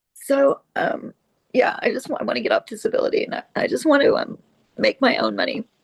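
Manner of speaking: crying, voice breaking, speaking through tears. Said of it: "sorry about crying".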